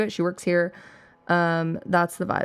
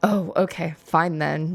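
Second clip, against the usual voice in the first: mock, slow, drawn-out, dismissive sarcasm. Retelling what he said in reply, imitating a sarcastic reply.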